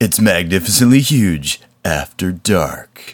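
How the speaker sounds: put-on seductive, sexy voice. Announcing the podcast's after-dark title as a joke: put-on sexy voice. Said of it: "So that sexy, sexy voice was [name]".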